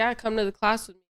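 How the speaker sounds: ordinary talk, nothing marked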